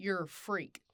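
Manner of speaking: words spat out through gritted teeth. Narrator reading a girl insulting the narrator: spat through gritted teeth. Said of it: "Ellie spits at me through gritted teeth".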